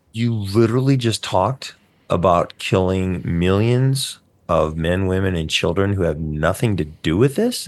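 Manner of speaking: ordinary talk, nothing marked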